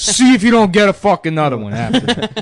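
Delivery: put-on Italian-American voice. Retelling what a stranger on the corner said: imitating a stereotypical Italian-American guy. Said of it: "saying Secaucus in that voice".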